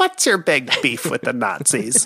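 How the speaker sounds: swooping nineteen-thirties movie villain voice, swinging wide. Quoting an interviewer's joke to a guest: Jiminy Glick impression. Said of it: "Best Jiminy Glick joke to Mel Brooks".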